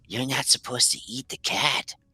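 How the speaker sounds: quiet whispering. One child whispers to another in Draconic, whispering. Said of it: "one whispers to the other in Draconic".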